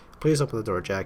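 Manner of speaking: plain reading voice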